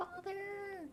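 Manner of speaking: very high, pinched, nasal cry pushed through nose. Voicing a character who screams a word: nasal Steve voice.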